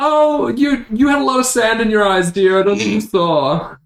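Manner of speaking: condescending character voice.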